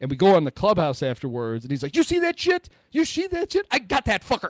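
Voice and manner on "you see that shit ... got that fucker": shrill, very high, repeated yelling. You are retelling what happened in the clubhouse after Miggy's grand slam, imitating Justin yelling. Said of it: "And he's like yelling at the thing".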